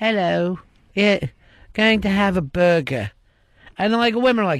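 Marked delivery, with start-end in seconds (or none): 0.0-3.1 squeaky, extremely high, simple-minded, dopey voice. Mocking a famous footballer as dim: David Beckham impression. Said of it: "He's got an extremely high voice".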